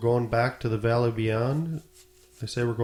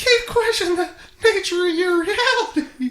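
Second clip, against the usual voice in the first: put-on high cartoon mouse voice; 6 dB louder than usual. Repeating a line to the others as a joke: Mickey Mouse voice. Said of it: "Mickey Mouse?".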